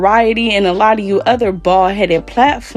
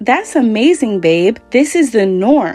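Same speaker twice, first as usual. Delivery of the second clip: ordinary talk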